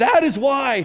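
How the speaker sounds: cracking voice. Speaker teaching about being created for connection, voice cracking. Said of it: "my voice just cracked".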